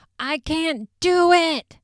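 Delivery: mock, very high, very slow, drawn-out aggressive scream. Retelling how one person turned and screamed at another: imitating someone screaming aggressively. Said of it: "He turns to Zach and screams".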